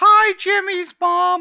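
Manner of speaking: high put-on cartoon kid voice. Going way up in pitch to sound like Carl Wheezer. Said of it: "Then I would just sound like Carl Wheezer".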